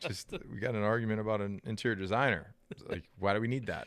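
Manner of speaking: normal talking voice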